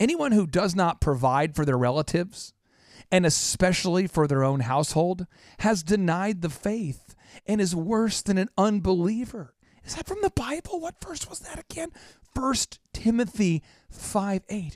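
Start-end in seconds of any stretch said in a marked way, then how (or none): 12.4-14.8 very slow, deliberately drawn-out delivery. Citing a bible verse so the listener can look it up, very slowly. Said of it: "Why are you saying it so slow?".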